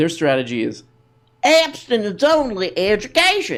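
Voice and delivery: put-on southern accent. Talking about Kentucky, doing the southern voice one more time: put-on southern accent. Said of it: "to do the voice one more time".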